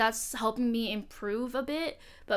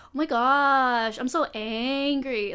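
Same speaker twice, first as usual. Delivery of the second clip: very slow, loud, elongated words, "gosh" stretched; 5 dB louder than usual. Showing how they stretch out phrases when talking: drawn-out words. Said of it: "the way it's like extended out".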